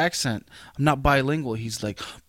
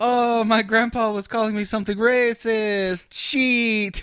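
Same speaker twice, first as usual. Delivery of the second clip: put-on Mexican accent, high-pitched; 8 semitones higher, 3 dB louder than usual. Recalling growing older and thinking about a grandpa's nickname: put-on Mexican accent. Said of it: "Is that you thinking that voice".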